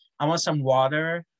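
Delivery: bad put-on American accent. Retelling how, told they sounded american, the speaker played on it with a bad american accent. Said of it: "So then I started playing on it".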